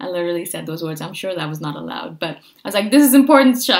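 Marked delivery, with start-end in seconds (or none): 2.9-3.8 acted-out, raised, high-pitched yell. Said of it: "because I yelled at them about it".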